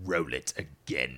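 deep, loud, ominous, low, looming voice. Retelling a panel moment, quoting the actor's line as Darth Sidious. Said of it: "as Darth Sidious".

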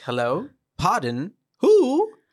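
put-on very high, swooping, old twenties-style transatlantic lilt. Quoting Jess answering the phone in a favorite scene, old 20s transatlantic accent. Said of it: "Old 20s accent".

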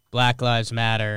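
normal talking voice

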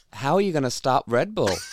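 jokey mock American accent. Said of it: "hearing your American, um, impressions".

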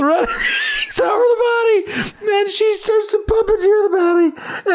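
very high, tearful speech laced with laughter. Retelling a movie plot to friends, laughing while talking. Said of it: "I'm in tears".

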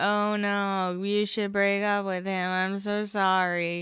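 mock flat, slow, level monotone drone without feeling. Retelling Audrina answering a crying Heidi, Audrina monotone voice. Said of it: "in that monotone voice that she does".

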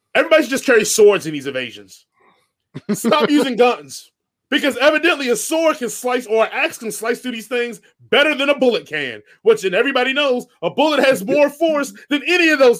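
worked-up, heated, upset rant, getting carried away. Ranting about a disliked movie, yelling, upset. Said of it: "I'm yelling".

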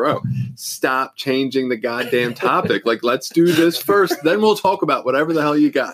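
half-shout just short of yelling. Recounting snapping at his wife while making a grocery list; retelling an almost-yell. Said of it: "I'm like almost yelling at her".

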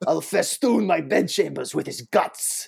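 slow, rough put-on voice. Showing off a pretty good impression of an actor: Daniel Day-Lewis impression. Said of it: "I have a pretty good impression of that guy".

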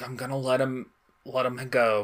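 mock choked-up voice, words catching with emotion. Imitating Silver letting Morph go: imitating Silver choking up. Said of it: "you could hear him kinda choking up".

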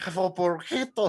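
put-on man's voice with attempted rolled r's. Retelling how J-Rock hands over a burrito: imitating J-Rock's rolled R's. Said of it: "I can't roll my R's".

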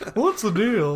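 deliberately bad, shrill, loud delivery. Joining the bit with a quick Seinfeld line: bad Jerry Seinfeld impression. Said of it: "That's terrible".

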